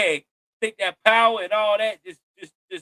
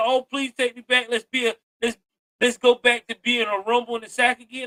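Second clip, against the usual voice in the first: ordinary delivery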